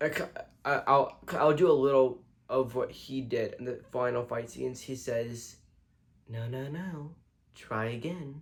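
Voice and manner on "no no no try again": gentle, slow delivery. Doing a bit of a character's line from a show's final fight scene: impression of a show character. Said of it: "That's how he sounded".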